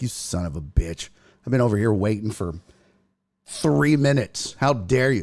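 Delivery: acted irritated, perturbed scolding with rising pitch. Retelling what a mom waiting in the green room says: imitating an annoyed mom. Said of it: "She's looking perturbed in the green room".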